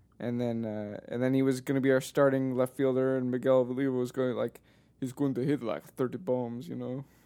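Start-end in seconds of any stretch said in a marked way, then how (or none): 5.0-6.7 bad put-on Italian-sounding accent. Retelling what a teammate said: terrible Miguel Olivo impression. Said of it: "that's a terrible impression".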